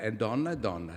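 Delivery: plain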